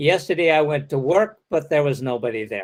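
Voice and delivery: rising pitch on "work", then a quick fall. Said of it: "non-falling at the end suggests more talk to come".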